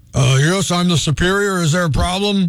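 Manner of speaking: put-on deepened voice. A worker pretends to be their own superior to a complaining customer, in a fake deep voice. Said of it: "It is the same person just deepening their voice".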